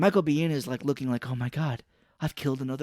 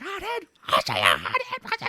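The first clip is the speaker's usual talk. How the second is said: put-on angry outburst, much higher pitched. Recapping a movie scene, the speaker acts out a character's line like Joe Pesci in Home Alone. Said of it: "like he's Joe Pesci in Home Alone".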